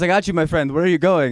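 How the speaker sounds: put-on Indian accent. Retelling what a cab driver said, in a put-on Indian accent. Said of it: "why did I keep doing it".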